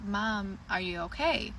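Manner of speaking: plain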